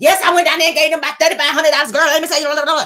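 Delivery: high, rushed excited chatter, words tumbling together. Imitating a woman excited about money: imitating fast excited talking. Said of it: "And she was talking fast".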